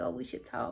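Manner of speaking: hushed whisper under the breath. Retelling a secret phone call with a crush: imitating own past whisper. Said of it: "so I'm whispering".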